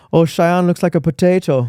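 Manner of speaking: put-on, high-pitched Irish accent. Imitating an acquaintance who teased Cheyenne: Irish accent imitating Mark. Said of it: "Irish accent, right?".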